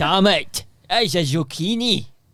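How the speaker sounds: put-on Scottish accent. Voicing a Scottish detective seeing a zucchini murder: put-on Scottish accent.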